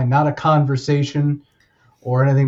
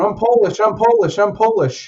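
mock high-pitched screaming, repeated over and over; 6 semitones higher than usual. Retelling a war story of surrendering men; imitating men screaming. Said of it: "they start screaming".

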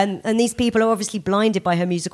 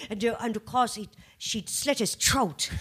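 put-on narrating voice of an old Irish fisherman; 10 dB quieter than usual. Imitating a video's Irish narrator for friends, sounding like an old fisherman. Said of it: "He sounds like an old fisherman".

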